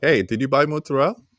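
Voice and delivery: Italian-American accent. Speaker married to an italian shows the accent slipping out: italian accent. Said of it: "the Italian accent really comes out".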